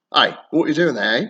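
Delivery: quick, rolling London Cockney street accent. Explaining english accents and giving a cockney example: cockney accent. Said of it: "Cockney accent".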